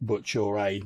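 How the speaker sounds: plain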